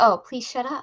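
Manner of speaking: ordinary talk, nothing marked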